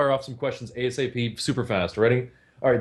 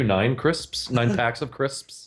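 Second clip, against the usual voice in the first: slow, sarcastic tone. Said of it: "Sorry for the sarcasm".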